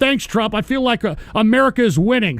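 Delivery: ordinary delivery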